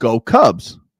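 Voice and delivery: ordinary talk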